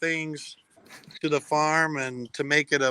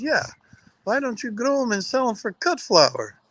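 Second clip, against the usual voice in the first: put-on Dutch accent, pitched up; 8 semitones higher than usual. Speaker retells what their mother said to them on the driveway, imitating mom's Dutch accent. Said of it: "she says to me in her Dutch accent".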